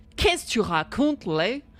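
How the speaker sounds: Québécois-style French Canadian accent. Speaker compares how french sounds to english speakers, demonstrating a french canadian accent. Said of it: "But like French Canadian is so".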